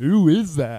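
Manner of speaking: booming, very loud, clueless-sounding yell. Retelling a friend's question during a movie: imitating Jason yelling dumbly. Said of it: "Like, really dumb, and, like, yells it".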